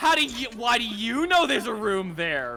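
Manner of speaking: firm, insistent demanding voice. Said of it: "I love that Phoenix Wright level of, like, objection".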